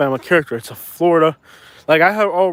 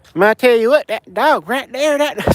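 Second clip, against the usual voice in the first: pitched-up backwoods hillbilly character voice; 7 semitones higher than usual. Breaking into a character bit, hillbilly voice. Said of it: "is that the hillbilly voice?".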